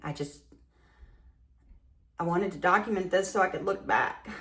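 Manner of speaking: tearful, crying voice, speaking through tears. Documenting this moment to look back on later, crying. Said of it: "I don't know why I'm crying".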